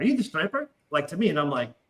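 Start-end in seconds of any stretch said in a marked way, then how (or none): 0.0-0.7 put-on Irish accent. Retelling what a drunk Irish girl asked at a bachelor party: imitating an Irish accent. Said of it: "because of the accent".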